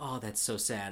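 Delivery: normal talking voice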